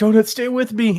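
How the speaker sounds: mock shrill, high, urgent, anxious, worried pleading. Retelling a video game scene, acting out him begging Donut: mock-worried urgent plea. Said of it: "he's so concerned for her".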